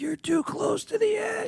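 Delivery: put-on scream, very high. Retelling a wife's warning at a cliff edge: imitating someone screaming. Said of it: "She's screaming at me".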